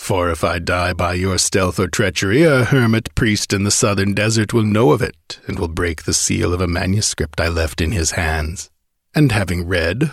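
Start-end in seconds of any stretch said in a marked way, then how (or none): none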